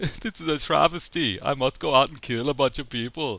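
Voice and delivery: high put-on German accent. Voicing Uwe Boll saying a line in a movie: Uwe Boll German accent. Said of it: "I just wanted to do a German accent".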